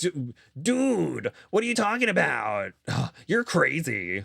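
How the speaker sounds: slow, easy, drawn-out character voice. Retelling a reality-show argument: Sandoval voice. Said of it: "is that the Sandoval voice?".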